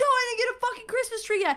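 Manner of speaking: shrill, very high, acted-out scream. Retelling answering a younger brother's call while at work, re-enacting own screaming. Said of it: "And I'm screaming".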